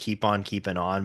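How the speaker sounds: ordinary delivery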